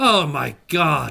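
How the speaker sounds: woman's voice ringing out. Narrating a scene where a voice rings out: female voice. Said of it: "A female voice".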